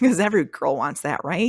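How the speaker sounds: sarcastic, dry delivery. Describing an ex who wanted her as wife number five: sarcastic. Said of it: "that's complete sarcasm".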